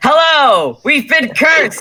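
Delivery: loud, high, too loud call in character voice. Playing a cursed character greeting a librarian: loud in-character call. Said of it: "Do you need to lower your voice here?".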